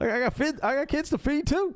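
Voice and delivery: very high, pitched way up character voice.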